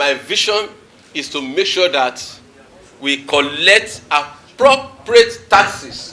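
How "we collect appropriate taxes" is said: appropriate drawn out, slow and loud. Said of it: "mark my word, appropriate".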